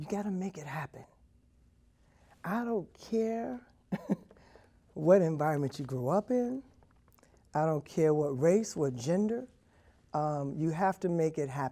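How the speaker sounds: emotional voice welling up with rising feeling. Answering a question about a message for future generations: getting emotional. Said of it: "I'm about to get emotional".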